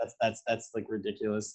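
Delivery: ordinary delivery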